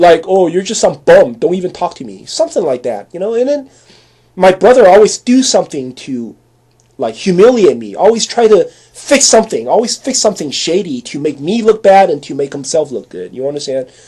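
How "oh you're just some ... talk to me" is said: put-on sarcastic, mocking tone. Retelling the sister's reply to a greeting, imitating a sarcastic reply. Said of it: "she always give me a very sarcastic reply".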